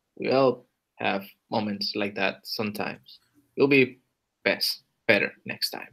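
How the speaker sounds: soft, hushed, softly spoken, reassuring tone. A dwarf character comforts a companion who failed to summon anything, speaking softly. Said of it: "just says very, like, softly".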